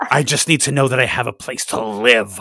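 desperate, begging voice at the end of hope. Playing a renter who needs a place to live, in a desperate voice. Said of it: "That is a desperate voice".

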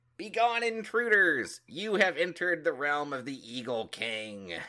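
tiny, high squirrel-like critter voice, booming bellow. Narrating the game, the speaker voices a squirrel warning intruders: tiny squirrel voice, bellowing. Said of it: "bellows out in its little tiny squirrel voice".

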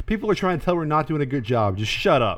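ordinary delivery

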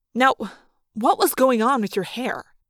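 plain reading voice

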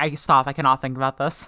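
ordinary delivery

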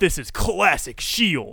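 loud, energetic ringside wrestling commentator voice. Calling a wrestling beatdown in Michael Cole voice. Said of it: "Michael Cole voice".

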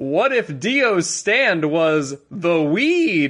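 slow, drawn-out fighting-game announcer voice. Reading a listener's message aloud as asked: Smash Brothers announcer voice. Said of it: "I imagine it in the Smash Brothers announcer voice".

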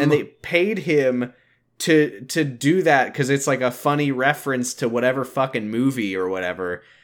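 ordinary delivery

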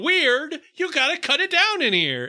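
play-acted playful yell, high and swooping. Retelling how he kept going in to tease weird al in the studio, jokingly imitating a yell. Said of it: "just yell at [name] jokingly".

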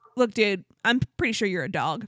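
ordinary talk

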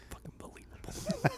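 muttered under the breath. Recreating an actor's ad-libbed line, muttered under his breath. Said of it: "he's so under his breath".

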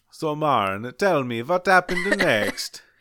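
put-on high-pitched vampire voice with strong Italian accent. In a game where players are vampires, asking another player what happened next, Italian-sounding vampire voice. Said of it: "My vampire voice is very Italian".

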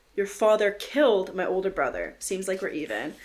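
ordinary delivery

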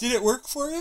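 high-pitched, said through a yawn. Speaker asking the other speaker a question, yawning. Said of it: "I say as I yawn".

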